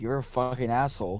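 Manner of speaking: mock-angry, acted angry outburst. Retelling a woman refused for the third time, imitating genuine anger. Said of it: "got like genuinely angry and was like".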